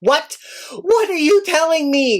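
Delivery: freaked-out, high, frantic yelling. Retelling a phone call about a torn box, retelling own yelling. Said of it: "I am yelling like".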